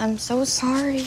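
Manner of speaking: mock sympathetic tone. Speaker imitates how people talked after the speaker's mom left, mock pity voice. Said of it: "people did that all the time".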